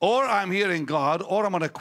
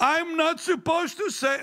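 mock crying in a much higher voice; 12 semitones higher than usual. Telling how a lady at the church started weeping, imitating a woman crying. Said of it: "And she's crying this".

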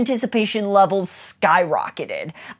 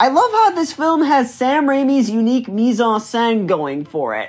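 bad, awful put-on fake French accent; 4 semitones higher than usual. Reviewing a film, in an awful French accent. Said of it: "Sorry for my awful, awful French accent".

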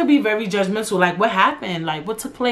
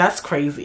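mock mad, judgmental, disapproving tone; 5 semitones lower than usual. Mimicking how judgmental listeners react to a story: mock-judgmental tone. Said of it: "y'all be saying it mad judgy".

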